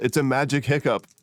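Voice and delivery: yelling in a character voice. Yelling in character to explain a magical effect: in-character yell. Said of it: "I yell".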